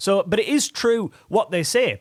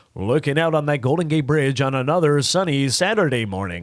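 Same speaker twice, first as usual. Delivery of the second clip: deep eighties American broadcast-media announcer voice; 4 semitones lower than usual. Describing the American media voice of the eighties: American media announcer voice. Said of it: "the American media voice".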